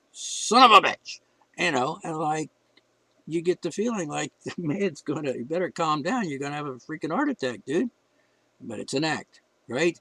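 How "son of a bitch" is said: irritated, drawn out, raised and pitched-up angry flare. Describing moments in a performer's act, acting out his mock-angry outburst. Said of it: "sounds like he's a little angry".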